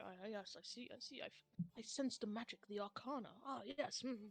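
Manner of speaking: very soft, hushed, self-absorbed mutter under the breath. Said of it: "He starts muttering to himself".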